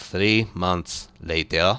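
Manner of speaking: very deep, low, hushed cartoon title-card narrator voice. Describing a time skip in a show, the speaker gives it in SpongeBob narrator voice. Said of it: "SpongeBob uh, narrator voice".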